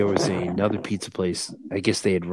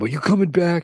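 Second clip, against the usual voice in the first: mock very high, shrill, angry yell; 11 semitones higher, 5 dB louder than usual. Retelling how a man from the job called his buddy, retelling a yell. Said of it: "the guy called and yelled at him".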